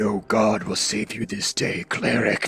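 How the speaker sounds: dark, deep, towering voice with low, looming tones. Narrator voicing a towering figure appearing behind the cleric, dark, towering, deep voice. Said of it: "this dark, towering, deep voice".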